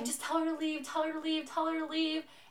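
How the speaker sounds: put-on high screeching, repeated over and over. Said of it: "she starts just, like, screaming".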